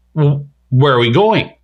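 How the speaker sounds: mock snot-nosed, snotty, bratty voice. Predicting what a girl will say when not headed to school, imitating a snotty voice. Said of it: "say in a snotty voice".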